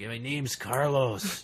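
put-on scratchy, old, tough-guy gangster voice. Retelling a boy saying his name: imitating a scratchy old gangster voice. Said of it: "You make him sound so old and gangsta-like".

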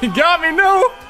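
in a panic. Streamer getting caught close to the end of a game, panicking. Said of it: "I'm panicking".

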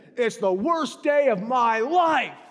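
high, drawn-out, heavily emphatic delivery. Retelling a clerk's answer when asked about his day: imitating a clerk leaning into it. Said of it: "he said it like that".

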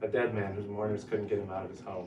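plain

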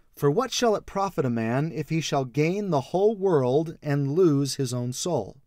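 normal talking voice

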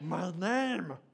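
raspy, hissing creature voice, spat out. Speaker shows listeners the voice, saying the line in a Gollum voice. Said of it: "You want to hear the voice".

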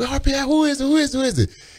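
high, impatient voice.

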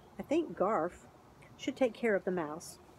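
ordinary talk

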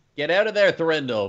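urgent, loud, high in-character shout. A game player, as their character, yells at Thrandall, shouting in character. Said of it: "Gorgon shouts in character".

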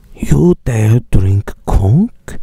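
very slow, judgmental, condescending talking-down drawl. Imagining what Pepsi Man in fan art would say: mock condescending Pepsi Man voice. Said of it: "condescending, judgmental stare like".

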